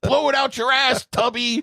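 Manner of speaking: very high, high-pitched shrieking, screaming yell. Retelling a movie scene where a caller gets cut off: imitating someone screaming. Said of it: "he starts screaming".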